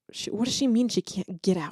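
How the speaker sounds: soft muttered aside to oneself. Retelling how a brother reacted to a text: imitating someone muttering to himself. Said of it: "kinda muttering to himself".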